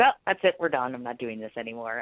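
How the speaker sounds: ordinary talk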